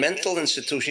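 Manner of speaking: ordinary delivery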